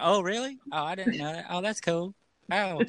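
very high, feigned amazement, acted-out fake-surprised ohs. Imitating a co-host's usual reactions, which she isn't doing tonight: imitating someone's fake-surprised reactions. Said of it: "She's not laughing and going".

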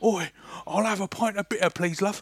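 loud bellowing bloke voice. Imagining a fifty-year-old overweight man ordering at the pub: imitating an overweight pub regular. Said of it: "I just imagined this fifty-year-old overweight man inside the pub".

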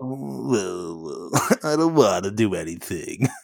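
"I" stretched out with a swooping pitch. Recalling an old cartoon dog, doing a Droopy impression. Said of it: "It's like an old Hanna-Barbera cartoon".

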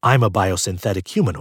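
ordinary delivery

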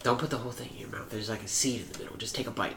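mock creepy whispering. Retelling a neighbor offering a Japanese plum: imitating a creepy whisper. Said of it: "Why are you whispering the whole time".

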